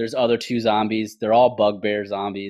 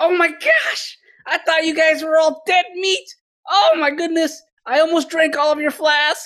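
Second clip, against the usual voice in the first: very high-pitched, loud, shrill yelling in a character voice; 5 dB louder than usual. Voicing a character yelling across a bridge to the party: yelling in character. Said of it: "He's yelling".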